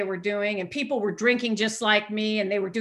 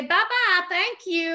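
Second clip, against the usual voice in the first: fake, put-on Southern accent, pitched high; 9 semitones higher than usual. Leaving a restaurant in the 80s, she says goodbye in a put-on Southern accent. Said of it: "I would put on a Southern accent".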